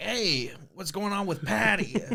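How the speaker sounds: put-on heavy Brooklyn accent. Retelling a movie scene, quoting the partner: thick brooklyn accent. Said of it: "The thickest Brooklyn accent you've ever seen".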